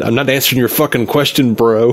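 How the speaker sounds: ordinary delivery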